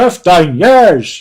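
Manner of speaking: very loud bellowing in a Northern Irish accent. Speaker reading listener comments repeats a phrase, in an Ian Paisley Northern Irish accent. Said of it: "my best uh, Northern Ireland accent".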